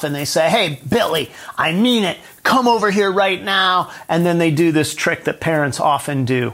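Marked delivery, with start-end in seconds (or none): 0.5-3.9 acted-out exasperated, fed-up voice, pitched up. Retelling a parent in a store who finally loses their temper: imitating a parent losing their temper. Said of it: "they finally kinda lose their stuff".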